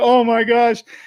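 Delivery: very high-pitched, distraught, upset shouting. Recounting a gambler upset at the dice table, imitating a man yelling. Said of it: "he's yelling at everyone".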